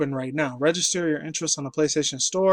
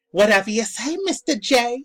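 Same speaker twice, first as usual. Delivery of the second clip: put-on East Coast accent, high-pitched; 8 semitones higher than usual. Describing a Harley Quinn clone character, quoting her in a Harley Quinn East Coast accent. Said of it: "she had like that East Coast accent".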